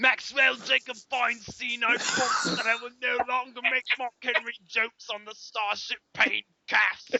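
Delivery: very high, loud, put-on British accent. Asked by a co-host to promise in a british accent, making the promise in a british accent. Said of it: "you got to promise me in a British accent".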